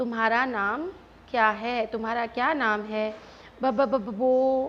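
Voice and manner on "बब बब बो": put-on stammer, slower. Retelling a little girl's answer when the teacher asked her name, imitating a stammer. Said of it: "उसने हकलाते हुए".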